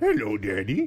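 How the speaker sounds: high-pitched, creepy clown voice. Showing the voice he used to make for a dog, a creepy Pennywise clown voice. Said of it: "he sounds just like the voice that you".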